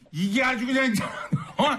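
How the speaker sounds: high, shouted, furious angry rant. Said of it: "화 좀 내주세요".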